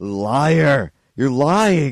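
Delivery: loud, high scream, "liar" stretched out. Retelling an aunt's visit, imitating her screaming: imitating aunt screaming. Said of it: "screaming at me".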